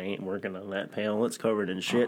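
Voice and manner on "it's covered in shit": usual speaking voice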